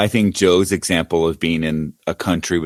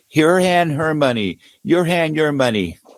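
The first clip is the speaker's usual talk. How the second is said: yelling, higher pitch; 10 semitones higher than usual. Retelling how a man at a casino table yelled at a woman: imitating a man yelling. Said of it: "yelling at her, like".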